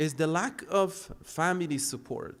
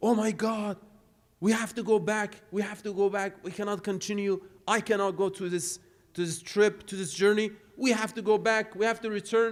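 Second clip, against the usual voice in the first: mock urgent, panicked, high, frantic cry; 6 semitones higher than usual. Retelling a story where a poor traveler panics on a journey: retelling a scream. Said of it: "and he started screaming".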